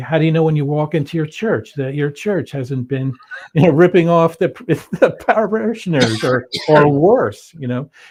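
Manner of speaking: put-on sarcastic delivery. Retelling own past reply to people's question: retelling own sarcastic remark. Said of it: "and sarcastically, I'd say".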